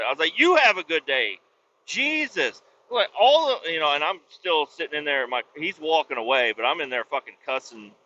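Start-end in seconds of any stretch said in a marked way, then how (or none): 0.4-1.4 put-on mean tone. Retelling a reply to an officer who gave a ticket: retelling a mean tone. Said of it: "I tried to say it in a mean way".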